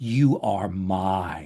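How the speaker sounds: low eerie voice, "mine" drawn out. A storyteller voices the voice a listener hears in their head. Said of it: "and then the voice says".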